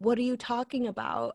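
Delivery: plain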